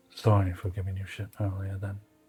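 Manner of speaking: hushed, close-in, leaned-in half-whisper murmur. Voicing a character who leans in to apologize: half-whispering in character. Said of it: "Ezra will lean in and whisper".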